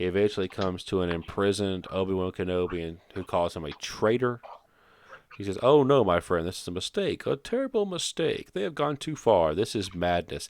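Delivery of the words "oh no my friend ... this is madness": unconvincing, insincere, sarcastic sing-song, mock earnest. Retelling a film scene, the speaker imitates the character's insincere line delivery. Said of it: "he delivers it exactly like that, like super... you don't even believe him. I guess he's being sarcastic".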